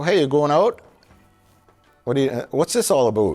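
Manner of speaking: put-on Canadian accent, about said as a boot. Showing how he would talk as an actor, in a canadian accent. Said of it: "go out in a boot".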